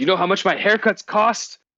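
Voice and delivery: shrill, high-pitched, exasperated, fed-up outburst. Voicing a character whose hair was just cut by a sword: exasperated. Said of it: "an exasperated sigh".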